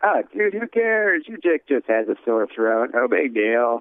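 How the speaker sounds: dismissive, brushing-off tone.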